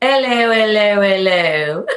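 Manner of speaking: very loud, belted-out Cockney accent. Joking about going to England, a speaker tries a Cockney accent like Eliza Doolittle. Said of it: "Do your best British accent, your Cockney accent".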